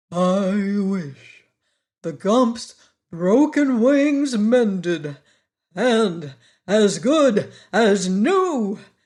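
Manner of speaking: slow, weighty delivery. Narrator reads the Wogglebug's line, in a slow, impressive voice. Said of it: "in a slow, impressive voice".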